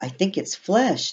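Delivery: said softly under the breath, slightly high-pitched. Reading Tom's reply to Charlotte as they look through a window, said quietly. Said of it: "Tom said quietly".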